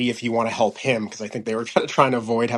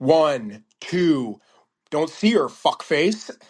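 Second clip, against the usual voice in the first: put-on very hostile, angry man voice, higher pitched; 4 semitones higher than usual. Retelling a man's rude reply in a store: imitating hostile, angry speech. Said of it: "super hostile, super angry".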